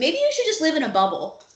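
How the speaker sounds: mock snide, high, mean, condescending teacher tone. Retelling what a teacher once said to a child: imitating a mean condescending teacher. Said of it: "a mean, condescending".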